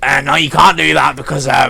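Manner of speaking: loud rasping creaky voice. Recounting what he said, doing it in an impression of his voice. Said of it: "I'll do an impression of his voice".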